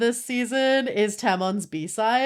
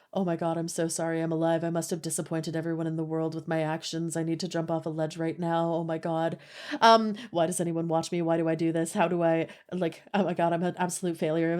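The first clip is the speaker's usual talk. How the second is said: put-on depressed, low, soft, anxious, despairing voice; 6 semitones lower, 6 dB quieter than usual. Describing a show's character, speaker acts out his off-duty self: imitating anxious, depressed Tamon. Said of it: "this man is just anxious and depressed".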